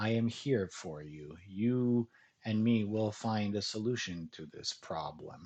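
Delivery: soothing, kind, reassuring FM DJ voice. Demonstrating how to bring the heat down with a passionate person; reassuring, kind FM DJ voice. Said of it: "you can use an F M D J voice, a very reassuring, kind voice".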